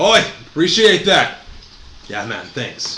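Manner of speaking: put-on high Jamaican-accented voice. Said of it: "the third one is Jamaican".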